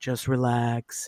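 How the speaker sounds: mimicking a sweet kind deep voice. Speaker quotes a partner telling them to relax, imitating his sweet deep voice. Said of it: "such a sweet, kind, deep kind of man voice".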